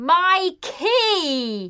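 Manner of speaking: high called-out shout, key word drawn out. A man who forgot his key answers a policeman's question by shouting. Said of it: "I shouted".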